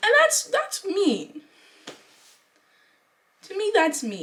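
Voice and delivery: holding back tears. Speaking in a video about being excluded by others, holding back tears. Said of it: "I'm trying not to cry".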